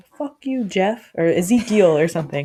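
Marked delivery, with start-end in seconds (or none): 0.2-1.1 yelling, pitched high. Acting out a meme where people at the mall are yelling: imitating a meme's yelling. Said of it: "at the mall and they're yelling".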